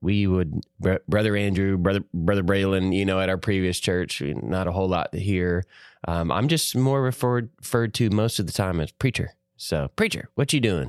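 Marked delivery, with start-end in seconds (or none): 10.0-10.9 slight put-on West Tennessee accent. Preacher retelling how people address him, in a little West Tennessee accent. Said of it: "that little West Tennessee accent".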